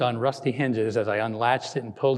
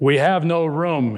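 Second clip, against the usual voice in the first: curt, abrupt, loud, brusque voice; 4 semitones higher, 5 dB louder than usual. The narrator's husband turns away a begging couple at the door; brusque. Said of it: "my husband said brusquely".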